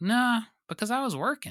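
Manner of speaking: put-on very high voice with heavily laid-on Southern accent. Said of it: "Jim being very Southern".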